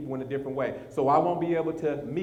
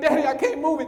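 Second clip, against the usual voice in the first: put-on crying, higher pitched and louder; 12 semitones higher, 6 dB louder than usual. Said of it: "and his son is crying".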